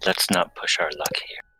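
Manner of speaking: hushed, whispered voice. Speaking in character near praying banshees: whispering. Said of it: "I'll whisper".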